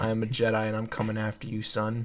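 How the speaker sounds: put-on threatening, menacing voice. Voicing Miles calling on an old rotary phone: Miles on the phone. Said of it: "on the other end, you hear".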